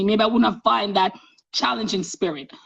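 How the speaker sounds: usual speaking voice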